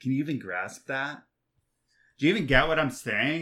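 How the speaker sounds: play-acted, mocking, needling, taunting jab. Acting out the text's taunt at the reader: imitating a mocking taunt. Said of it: "mocking you right now".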